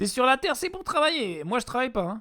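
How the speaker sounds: put-on Yiddish-inflected accent slipping in unintentionally. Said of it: "Pourquoi je prends un accent juif ?".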